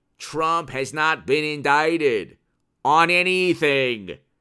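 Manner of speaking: very slow, deliberate, drawn out word by word. The speaker tells listeners to say it slowly, then states the point himself, very slowly. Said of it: "Say it slowly".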